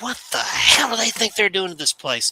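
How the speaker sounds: put-on very high, furious, out-of-control screaming rage. Recalling losing control on the veranda beside a friend, retelling a furious scream. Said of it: "I started raging and I'm screaming".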